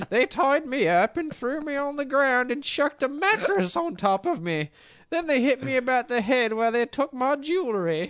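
put-on very high, feeble old-lady falsetto squeal. Recounting being tied up and robbed, in a Monty Python old-lady voice. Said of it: "Monty Python's Flying Circus men in drag as old ladies' voice".

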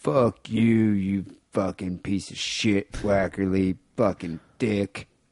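put-on slow, drunken, rambling ranting voice.

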